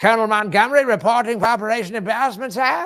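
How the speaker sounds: put-on shrill, loud British accent drifting into Eastern European. Improvising a colonel reporting to his superior, Colonel Montgomery wandering accent. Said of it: "Did did your accent just trail off into".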